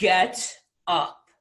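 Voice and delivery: deep, low voice. Retelling how he ordered you off the sofa, use a deep Les Brown voice. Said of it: "in his deep Les Brown voice".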